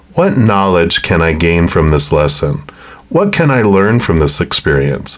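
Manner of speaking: normal talking voice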